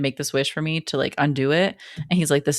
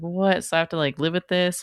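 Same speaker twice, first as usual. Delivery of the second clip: imitated angry, complaining tone; 3 semitones higher than usual. Retelling a character's reaction: imitating someone angry.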